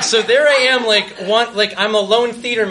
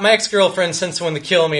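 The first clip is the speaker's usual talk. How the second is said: ordinary talk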